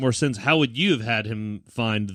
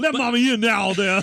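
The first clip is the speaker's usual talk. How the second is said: Bayou accent laid on thick, very high pitch; 12 semitones higher than usual. Redoing a movie mother with a Bayou accent, as suggested: Bayou accent. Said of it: "give her a Bayou accent".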